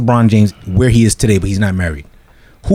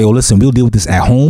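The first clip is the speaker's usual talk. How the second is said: ordinary delivery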